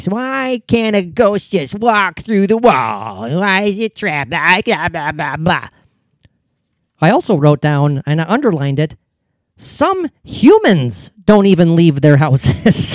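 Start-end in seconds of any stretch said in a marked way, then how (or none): 0.0-5.7 mock sneering, dismissive, skeptical tone. Speaker reading a note to himself, mimicking a pseudo-skeptic: mocking pseudo-skeptic tone. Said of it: "doing the mocking tone of like the pseudo skeptic".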